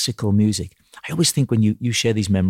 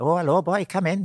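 put-on Welsh accent with pitch pushed up higher; 9 semitones higher than usual. Recalling a comedy sketch, speaker voices the Welsh piano teacher greeting Pete: Dudley Moore's Welsh piano teacher. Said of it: "Dud is the Welsh piano teacher".

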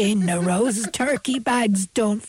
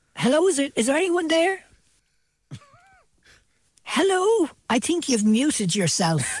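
put-on elderly granny voice, much higher; 6 semitones higher than usual. Ringing someone with prerecorded bits: old granny voice. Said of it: "the granny voice".

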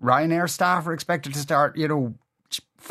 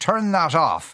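put-on Scottish brogue, slower. Retelling telling a woman to switch her phone off, in best scottish brogue. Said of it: "in my best Scottish brogue".

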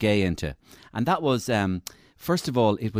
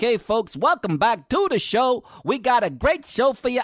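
put-on American accent; 14 semitones higher, 3 dB louder than usual. Quoting someone welcoming folks back to the show, put-on American accent. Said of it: "decided to talk like an American".

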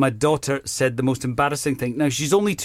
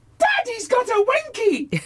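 put-on very high, loud sing-song little-girl shout. A father retells what his daughter said in her loudest voice: retelling her loudest shout. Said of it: "she says in her loudest voice".

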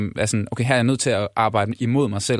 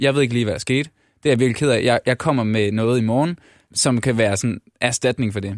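ordinary delivery

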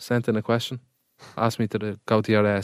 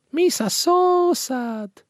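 put-on cartoonish alien voice, higher pitched. Joking about sounding like him, putting on a Jar Jar Binks voice. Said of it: "sounds like you're putting on a voice".

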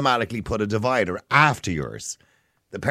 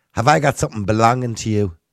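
put-on strong, thick, loud Dublin accent; 5 dB louder than usual. Retelling what a woman who caught him looking said to him, strong dublin accent. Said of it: "in the best Dublin accent".

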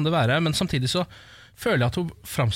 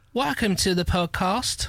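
British accent with lifted, higher pitch; 5 semitones higher than usual. Asked by Ken to speak some English on the podcast: David Beckham British accent. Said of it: "Nå prøvde jeg en litt sånn ... David Beckham? Ja, det er David Beckham".

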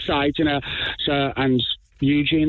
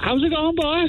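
dreadful put-on Cork accent, pitched very high; 12 semitones higher than usual. Asked to do it again, the speaker repeats an appalling Cork accent. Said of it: "It sounds dreadful".

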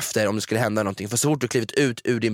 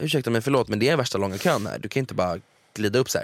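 plain

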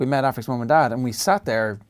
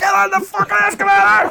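ragged, shrill, raw screaming, very high and loud; 8 dB louder than usual. Retelling screaming at a child refusing the escalator: imitating a scream. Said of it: "screaming at her".

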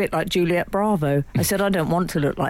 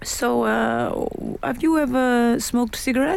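slow, put-on Italian accent; 7 semitones higher than usual. Retelling a conversation with an Italian man, quoting him in an Italian accent. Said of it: "So am I allowed to do the accent?".

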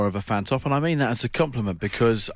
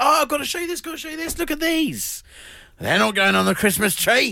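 put-on Cornish accent, much higher pitch; 14 semitones higher than usual. Retelling what she said to someone after waking this morning, Cornish accent. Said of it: "you did a Cornish accent".

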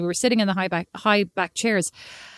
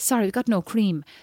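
put-on Irish accent. Retelling a Dublin trip, mimic the replies heard everywhere in an Irish accent. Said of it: "so Irish again".

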